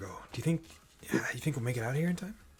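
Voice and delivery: barely-there, very quiet, hushed half-whisper. Game narrator voicing a woman right next to the players, half-whispering. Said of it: "you hear her kind of whisper".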